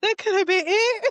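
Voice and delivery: high, panicked exclamation.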